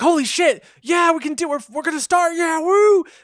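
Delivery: very high, loud, excited crowd whooping cheer. The narrator voices the gravers reacting to an announcement as an excited cheering crowd. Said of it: "All the gravers are like".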